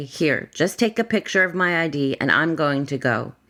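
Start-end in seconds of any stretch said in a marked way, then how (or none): none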